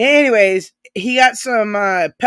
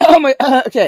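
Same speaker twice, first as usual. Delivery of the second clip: words caught in a high, loud choking splutter; 5 semitones higher, 5 dB louder than usual. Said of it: "choking here a little bit".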